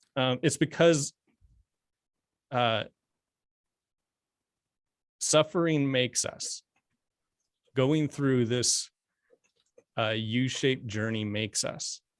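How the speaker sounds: choked-up, halting voice catching with emotion. Talking with a listener in conversation, already getting choked up. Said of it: "I'm already getting choked up already".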